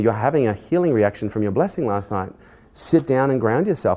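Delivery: ordinary delivery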